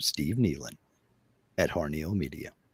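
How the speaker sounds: put-on on-air radio announcer voice. Recalling how he clears his throat and leans in: radio voice. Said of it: "I put on my radio voice and I lean in and I go".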